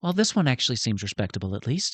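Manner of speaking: stage whisper, meant to be overheard. A game character whispers to another, loud enough to be overheard: stage whisper. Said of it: "just kinda whispers to you, loud enough".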